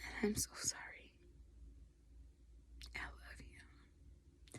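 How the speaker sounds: soft, tearful near-whisper, holding back tears.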